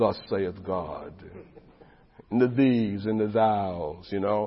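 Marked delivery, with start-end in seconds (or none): 0.0-1.1 posh, rounded, rich British accent. Standing up in a great, pious church, speaking in a rich British accent. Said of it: "I start speaking in a rich British voice".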